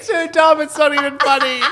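very high, giggly, laughing through the words. Telling the others about a text, laughing while talking. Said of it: "I don't know why I'm laughing".

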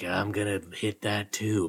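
low, hushed put-on Thai accent. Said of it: "Using his best Thai voice".

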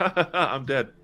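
put-on, giddy, high, loud laughing delivery. Describing a scene from a show, acting out a character: imitating a character laughing. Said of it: "one of the characters is like laughing".

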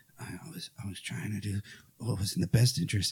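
soft mumbling under the breath. Retelling a movie scene, quoting the mayor: imitating the mayor muttering. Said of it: "the mayor's kinda muttering to himself".

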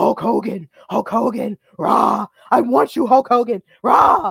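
raw, rough, gravelly, repeated rasping calls. Recalling an old promo with Hulk Hogan, doing a raw Zeus voice. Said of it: "with his raw voice, like saying".

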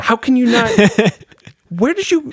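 put-on frustrated, disbelieving outburst. Speaker demonstrates how they sound when frustrated with someone, mock-exasperated. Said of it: "The exasperation in your voice".

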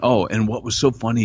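normal talking voice

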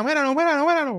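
put-on high-pitched, taunting, jeering villain voice. Retelling a wrestling match, acting out a heel taunting a child: acting out a heel wrestler taunting. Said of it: "Él le dice a la nena".

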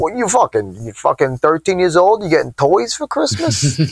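put-on thick, swooping Italian Long Island accent. Act out your dad reacting to your Christmas toys, in dad's Italian Long Island accent. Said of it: "in his Italian Long Island accent".

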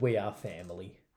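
ordinary talk, nothing marked

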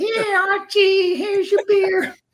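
very high, pitched-way-up sitcom-wife voice. Bringing Archie his beer in character, really good Edith Bunker impression. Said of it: "that's a really good impression of Edith Bunker".

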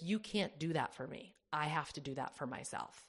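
normal talking voice

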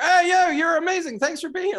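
very high-pitched, loud, cheering holler. Retelling a visit to new york, imitating yelling at people. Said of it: "I'm yelling at police officers".

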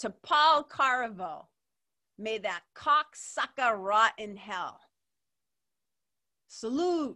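slow, loud, mock solemn voice.

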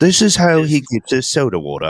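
put-on nature documentary narrator voice. Watching someone at the fridge, a speaker narrates in a Nat Geo wildlife narrator voice. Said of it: "This is the Nat Geo version?".

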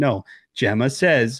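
ordinary delivery

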